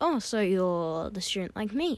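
ordinary talk

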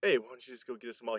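easygoing, laid-back fatherly dad voice. Retelling what dad says about getting malt: imitating dad's voice. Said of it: "I enjoy your voices for your family".

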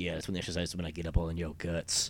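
sleazy, leering, creepy tone. Picturing a trainer leading a class, creepy personal trainer voice. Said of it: "creepy ass personal trainer leading".

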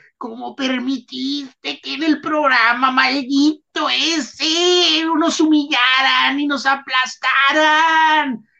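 put-on high, slow, angry reproachful scolding. Retelling how home fans scolded a Bilbao press man, retelling an angry scolding. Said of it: "fue abroncado".

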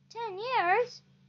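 gasping. Narrator reading the king's reply in a story, gasped. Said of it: "Gasped the king".

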